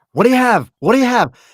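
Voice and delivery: very loud, very high-pitched, impatient shouting. Speaker recalls longtime regulars yelling at a first-timer; retelling impatient yelling.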